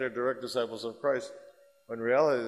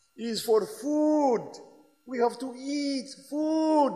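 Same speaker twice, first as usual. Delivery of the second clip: put-on thick French accent at very high pitch; 13 semitones higher than usual. Retell the filmed answer of a big man in the church, in a heavy french accent. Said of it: "Heavy French accent".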